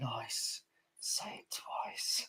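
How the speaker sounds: very quiet, slow whispered mutter under the breath. Retelling what a coworker says under his breath after a customer speaks: imitating a mutter under breath. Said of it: "he goes under his breath".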